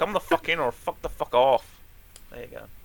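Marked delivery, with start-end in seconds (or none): 0.0-1.6 put-on Scottish accent that sounds Irish. Speaker tries out a Malcolm Tucker impression: Malcolm Tucker impression, sounding Irish. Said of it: "You're sounding a bit Irish".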